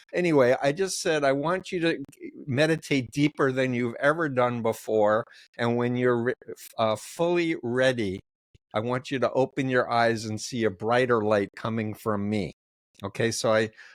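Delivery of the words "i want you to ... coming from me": normal talking voice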